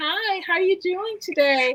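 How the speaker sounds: put-on, fake, polite customer-pleasing work voice. Explaining what we do to appease everyone else, demonstrate the fake voice. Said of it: "fake voice".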